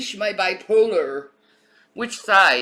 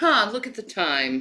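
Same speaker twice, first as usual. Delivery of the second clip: put-on patronizing, condescending, offhand tone; 2 semitones higher than usual. Imitating a suspect speaking to officers: imitating Russell's condescending tone. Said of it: "He's like".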